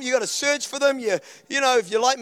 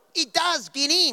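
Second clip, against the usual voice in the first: bad, drawn-out Australian accent in a commercial voice; 3 semitones higher than usual. Retelling a toothpaste advert with chalk: imitating a horrible Australian accent. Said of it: "that horrible Australian accents".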